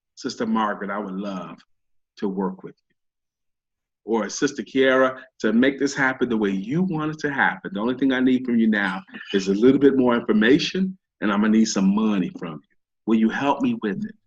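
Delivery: low, dropped-down voice. Showing when to drop into the date voice when asking for money, dropped-down date voice. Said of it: "drop it down ... That's when you drop in your date voice".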